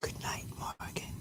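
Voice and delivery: whispering gently and softly. Ending a stream, saying goodnight in a gentle whisper. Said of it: "Am I whispering to Morgan right now with my gentle voice".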